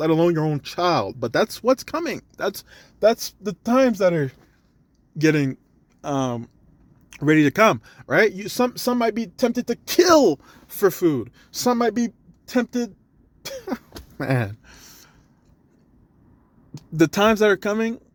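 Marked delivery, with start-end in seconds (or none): 8.3-17.9 stammering, halting speech, stumbling over repeated words. Speaking to someone he calls bro, the speaker is stuttering. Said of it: "You see the way I'm stuttering".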